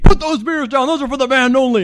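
mock screaming at a very high pitch. Retelling being caught taking beers backstage: imitating a screaming road manager. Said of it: "the road manager screams at me".

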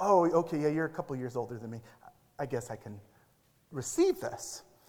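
mock whisper under breath. Retelling a brother's reaction to correction: imitating someone whispering under his breath. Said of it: "he even whispered under his breath".

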